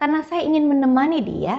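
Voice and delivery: sincere, heartfelt, warm, friendly tone.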